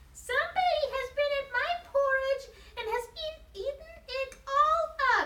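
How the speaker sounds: very high, tiny little bear voice. In a read story, the little wee bear finds his porridge eaten, little small wee voice. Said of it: "in his little small wee voice".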